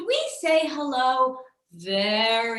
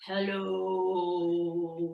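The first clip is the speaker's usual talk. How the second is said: very deep, low, soft, stretched, drawn-out voice; 7 semitones lower, 7 dB quieter than usual. Leading a group in a high-and-low voice game, say hello as low as possible. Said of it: "Let's say hello as low as we can".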